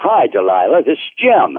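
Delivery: cheerful, chipper, sing-song voice. A caller named Jim greets the host on the phone, chipper. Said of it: "You sound like you're in a chipper mood tonight".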